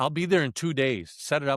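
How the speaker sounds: plain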